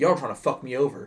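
put-on imitated stern tone. Retelling what a man said to the speaker: imitating someone speaking sternly. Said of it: "very stern with me".

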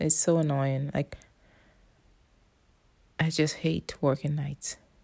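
talking quietly. Talking at night while everybody in the house sleeps, talking quietly. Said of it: "I can't talk very loud because everybody's sleeping".

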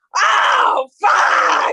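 loud, cawing, crow-like scream. Retelling how a woman screamed like a crow: imitating a woman screaming like a crow. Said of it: "This woman screamed like a crow".

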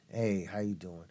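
very low, deep, quiet voice. Answering worried callers during an April Fool's joke, real low tone. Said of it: "Like real low tone".

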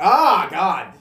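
high, very loud screaming outburst. Retelling a movie scene where the character Shinji starts screaming: imitating Shinji screaming. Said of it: "Shinji just starts screaming".

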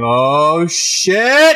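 high, sudden, burst-out yelling scream. Recounting watching a football catch on screen, retelling a scream. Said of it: "I just started screaming".

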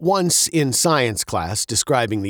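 plain

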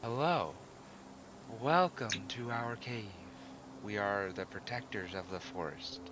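soft, airy, otherworldly, ethereal female voice. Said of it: "A female ethereal voice".

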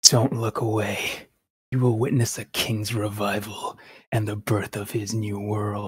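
mock villainous king voice. After the podcast introductions, a co-host does a bit: Ganondorf impression. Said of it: "That was my Ganondorf impression".

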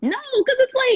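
very high voice breaking mid-line. Arguing about games on the Switch, the speaker's voice cracks mid-sentence. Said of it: "my voice really did crack".

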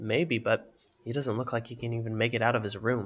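plain

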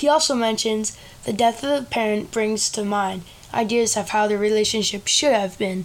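plain

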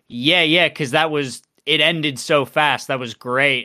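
ordinary talk

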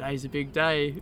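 ordinary talk

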